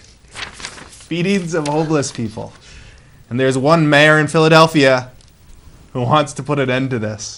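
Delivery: speaking through laughter. Introducing a news story to another speaker, laughing while talking. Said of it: "I'm laughing 'cause it".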